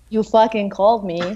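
ordinary talk, nothing marked

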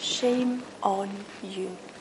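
barely audible, accusing half-whisper. Acting out the accuser speaking into our ear: half-whispering. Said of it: "he whispers in our ear".

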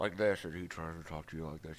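very low words out one corner of mouth. Showing how a boy answers questions in class, imitating Dylan's side-mouth talk. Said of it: "he opens the side of his mouth".

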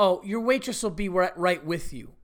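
put-on snippy attitude tone. Retelling how a woman answered their request for waters, imitating her attitude. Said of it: "And with an attitude".

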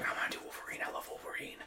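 soft, unvoiced, secretive whisper.

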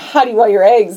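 ordinary talk

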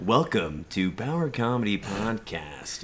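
on-air radio host announcer voice. Opening their comedy podcast, doing a radio personality voice. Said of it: "Sound like a freaking radio personality".

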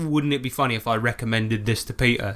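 ordinary talk, nothing marked

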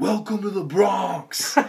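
very high, loud, shrill scream. Retelling a race where a spectator greeted runners: imitating a woman screaming. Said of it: "very portly woman is just screaming to everyone".

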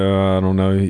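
low, mumbled, noncommittal muttering. Retelling a poker game moment, imitating someone muttering.

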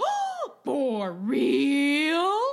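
very loud, intense, swooping cartoon dog voice. Retelling how an intense man reacted to being offered an elf hat, imitating a cartoon dog voice. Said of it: "Like when a dog gets a voice in a cartoon".

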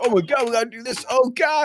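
mock frantic, panicked babble, very high-pitched. Teasing the other speaker for freaking out, imitating his panicked voice. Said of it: "the panic in his voice".

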